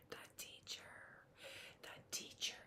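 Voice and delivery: soft, very quiet whisper. Talking about a classroom, the speaker drops to a whisper. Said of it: "I'm whispering".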